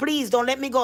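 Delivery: ordinary delivery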